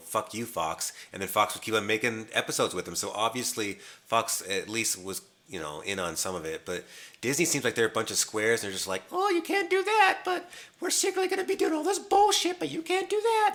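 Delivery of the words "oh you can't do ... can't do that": squeaky, high-pitched voice. Speaker mocks Disney as a bunch of squares, Mickey Mouse voice. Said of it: "Venom on helium".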